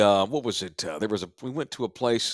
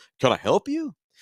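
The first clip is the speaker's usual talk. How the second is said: play-acted, puzzled, confused, pitched-up tone; 6 semitones higher than usual. Retelling how a restaurant worker greeted him: imitating a confused question. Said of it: "He was confused".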